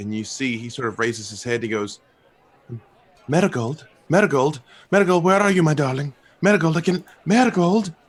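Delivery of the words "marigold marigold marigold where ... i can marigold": very loud, high, anxious, worried shouting. Voicing an elf looking out the window for Marigold: very concerned calling out. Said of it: "very concerned".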